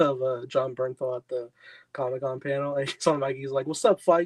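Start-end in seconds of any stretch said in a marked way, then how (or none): 3.7-4.3 play-acted, very aggressive, loud, in-your-face, pitched up. Retelling a Comic-Con panel clip: aggressive Jon Bernthal imitation. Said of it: "very, like, aggressive".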